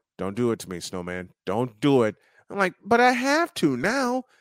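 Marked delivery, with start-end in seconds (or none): 0.2-2.2 low, hushed, murmured, held-down tone. Retelling Darrell's reaction before the question was asked, Darrell's low tone. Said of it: "I could just hear Darrell in a low tone going".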